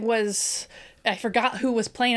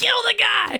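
mock shrill, high-pitched, excited screaming; 12 semitones higher, 4 dB louder than usual. Retelling watching a game and wanting a touchdown: imitating herself screaming. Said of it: "screaming at the T V".

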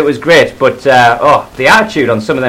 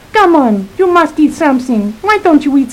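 put-on childlike little girl voice, much higher; 14 semitones higher than usual. Imitating her urging him to eat, in a little girl voice. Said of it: "she's got this really little girl voice".

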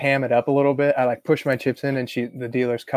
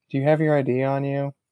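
put-on meek, sheepish, small voice. Retelling how a casino worker came over with head down: imitating someone asking sheepishly. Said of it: "she comes over sheepishly".

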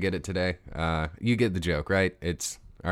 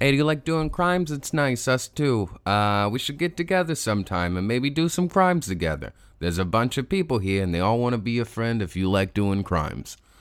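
put-on Canadian accent, pitched up; 5 semitones higher, 4 dB louder than usual. Reading a joke ad inviting crime lovers to get in touch: put-on Canadian accent. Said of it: "definitely not Canadian based on this accent".

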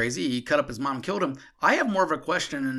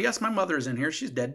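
normal talking voice

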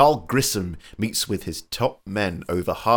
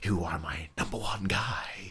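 unsettling, very creepy delivery with an eerie edge; 2 semitones lower, 10 dB quieter than usual. Imitating an actor playing a mob boss: creepy Jack Palance talk. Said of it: "that very creepy sort of talk".

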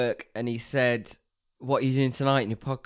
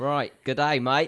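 fake, put-on Australian accent; 2 semitones higher than usual. Greeting the other speaker to start a bit, fake Australian accent. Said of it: "I was going to carry on the Australian oh, accent".

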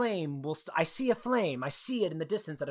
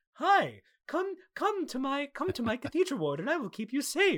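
very high, sweet, kindly, welcoming voice; 9 semitones higher than usual. Retelling what the game character who runs the cathedral says: imitating a nice-sounding game character. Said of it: "And he sounds so nice".

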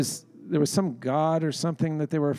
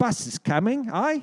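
silly, high, put-on English accent; 8 semitones higher than usual. Retelling a bit performed for an audience, in a put-on english accent. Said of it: "we were doing English accents".

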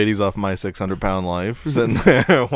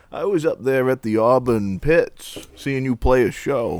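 put-on Maine accent. Retelling a call you made after getting information about people, in a put-on Maine accent. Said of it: "I throw on a Maine accent".

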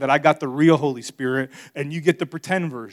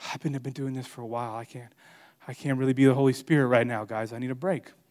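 put-on winded voice, quieter; 3 semitones lower, 7 dB quieter than usual. Speaker voices the Holy Spirit as if worn out after 2,000 years; mock-winded Holy Spirit. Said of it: "now he's just a little winded".

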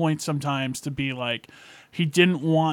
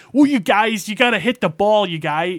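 put-on raised, higher-pitched, funny Delco mid-Atlantic accent; 6 semitones higher, 6 dB louder than usual. Describing Bernthal's role in a movie, doing Bernthal's Delco accent. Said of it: "this funny, like, Delco, like, accent, like, mid-Atlantic accent".

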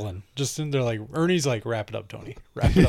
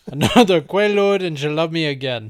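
yelled put-on movie gangster voice, higher and louder; 4 semitones higher, 6 dB louder than usual. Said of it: "[name] yells it in the Scarface voice".

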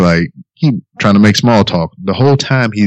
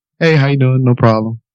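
cool, calm, breezy, unbothered casual tone; 4 semitones higher than usual. Retelling staying outwardly calm while panicking inside, a mock-calm casual greeting. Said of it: "My body was just calm, cool, collective".

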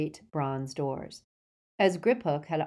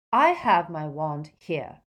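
cold, icy, louder and slower; 4 dB louder than usual. Hermione answers Travers's question about her wand, coldly. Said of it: "said Hermione coldly".

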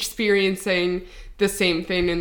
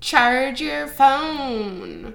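high, jeering, mocking voice with phone drawn out; 6 semitones higher than usual. Podcast host imitating men who reply to their screenshots, in a put-on voice. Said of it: "I don't know why I'm doing that voice".

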